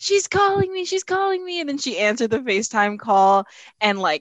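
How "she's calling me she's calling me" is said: put-on scream, much higher. Retelling a woman receiving a call from SUNY, imitating someone screaming. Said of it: "she started screaming".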